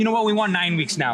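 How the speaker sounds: ordinary delivery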